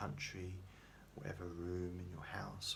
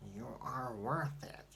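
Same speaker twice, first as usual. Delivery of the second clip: clumsy, bad put-on Boston accent, higher and louder; 6 semitones higher, 6 dB louder than usual. Trying to recall what a woman says in her video, do a bad Boston Chickie impression, Boston accent. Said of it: "I'm trying to do the Boston accent".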